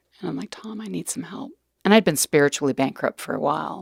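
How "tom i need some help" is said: very quiet, high, hushed, tearful sobbing. Recounting phoning someone for help, retelling a sobbing plea. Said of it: "I called him up and I was like sobbing".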